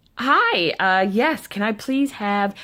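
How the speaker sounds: slow, put-on, overly bright, extra peppy voice. Retelling ordering at a McDonald's counter, imitating own extra peppy tone. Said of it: "I'm trying to be peppy, extra peppy".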